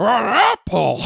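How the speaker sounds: creaky high-pitched delivery. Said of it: "Christopher Lloyd just goes".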